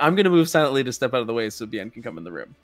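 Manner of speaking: usual speaking voice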